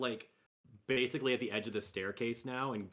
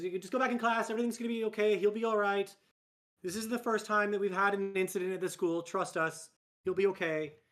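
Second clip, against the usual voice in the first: flustered, tumbling words, fast and raised voice; 8 semitones higher, 5 dB louder than usual. A school staff member reassuring a student after an incident at school, flustered. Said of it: "she is kind of flustered".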